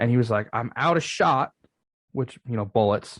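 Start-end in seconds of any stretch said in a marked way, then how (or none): 0.5-1.5 put-on Southern US accent. Retelling what a man said after his father bought him a rifle, southern accent. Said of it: "talking in a southern accent like this".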